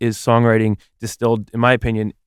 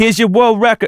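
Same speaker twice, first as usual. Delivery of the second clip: heavy put-on New Jersey accent, loud and high; 11 semitones higher, 5 dB louder than usual. Doing an impression of the listener, as an impression that sounds New Jersey. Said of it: "the heaviest you've ever sounded like you're from Jersey".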